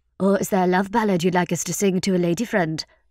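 ordinary delivery

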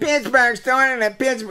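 put-on very high-pitched, whinging, whiny Irish accent. Mocking Miller's claim about the rivalry: imitating Miller's whiny Irish voice. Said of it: "with that little whiny Irish voice of his".

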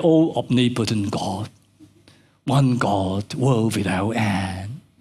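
solemn, low, slow, formal prayer-like tone.

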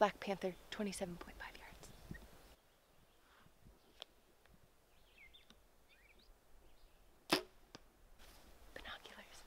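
whispering. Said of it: "I don't know why I'm whispering".

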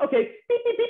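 very high, robotic beeping.

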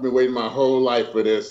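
ordinary talk

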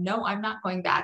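mock insistent, half-shouted mild yell. Retelling how she refused to go back when told she didn't die: retelling her own yelling. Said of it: "I was screaming".

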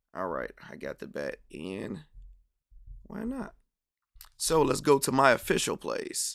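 hoarse, rasping, worn-out voice with swooping pitch. A speaker places a bet after working all day, hoarse, losing voice. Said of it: "voice is gone".

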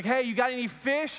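high, drawn-out, loud call. Retelling a man on the beach calling to a boat: calling out loudly. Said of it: "he yells out to them".

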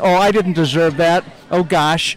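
ordinary talk

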